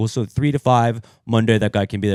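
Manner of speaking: ordinary talk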